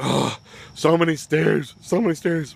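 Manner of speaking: mock whining. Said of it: "Whisper sitting there like".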